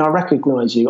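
ordinary delivery

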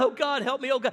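calling out. Telling a story of a young man frozen in a sliding car: crying out to God. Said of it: "He begins to cry out".

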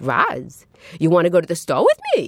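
put-on casual, sing-song Brooklyn neighbourhood accent. Retelling how a friend from the building spoke: imitating a friend's Brooklyn accent. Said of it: "friends that had Brooklyn accents".

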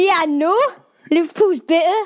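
bad put-on Geordie accent. Asked to do a geordie accent for the fans, attempting a geordie accent. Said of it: "I'm not sure what that accent is".

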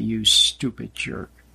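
mock low sneer with open contempt. Giving an example of someone insulting you, sneering with contempt. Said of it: "they say it with a sneer and with contempt".

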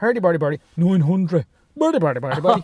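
imitated Dublin accent. Repeating the bit he was doing earlier, in a Dublin accent. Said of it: "I was doing the Dublin accent as well".

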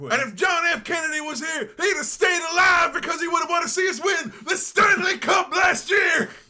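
belted, high-pitched loud delivery. Retelling what Bradshaw said in his speech: imitating Bradshaw. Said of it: "he's just like".

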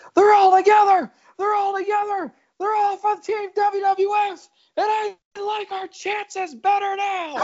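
mock very high, frantic, excited commentary-style screaming. Acting out JR as Austin turns face and joins the Alliance, in a JR screaming impression. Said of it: "JR is just screaming".

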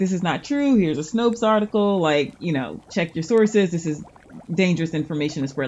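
normal talking voice

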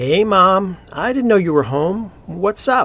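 a little too cheerful. Michael greets his mother at the top of the stairs, a tad too cheerful. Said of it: "making his voice sound just a tad too cheerful".

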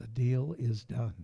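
imitated low whisper. Retelling a general manager's words at the Forum: imitating Jerry West whispering. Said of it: "he whispered to me".

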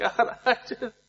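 high, mock, phony tearful crying voice. Retelling how she fake cried with only one other person in the room, imitating fake crying. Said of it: "He knows I'm fake crying".

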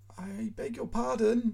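timid, very high and slow. Foma Nikolaitch, the boarder, answers Krasnoukin's complaint about his praying: timid. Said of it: "answers Foma Nikolaitch timidly".

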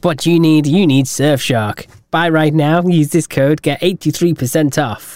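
online sponsor advert voice. Explaining the discount offers, the speaker slips into a YouTuber ad-read voice. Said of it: "I sound like a YouTube advert now".

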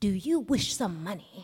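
quiet whisper. Reading a story aloud, a man offers a tramp money: quiet whisper. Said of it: "quietly whispered".

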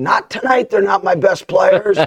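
very high, loud scream fired straight back. Retelling own reply screamed back at the player: retelling own scream. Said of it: "I screamed right back at him".

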